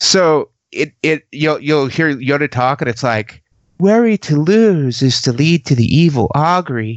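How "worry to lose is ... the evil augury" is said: put-on, very effeminate dubbed voice. Mocking the English dub of Yoda: effeminate dubbed Yoda voice. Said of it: "they English dub Yoda with just this very effeminate voice".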